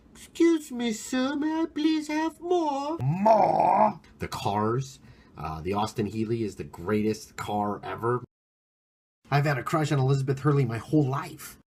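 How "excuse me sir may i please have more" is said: squeaky, very high put-on little orphan voice. Imitating a poor little orphan child asking for more: imitating a poor orphan child. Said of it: "I love the poor little orphan children".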